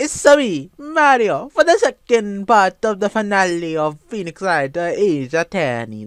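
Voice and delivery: really bad put-on Italian accent. Opening an episode, speaking in a really bad italian accent. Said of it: "really bad Italian accent there".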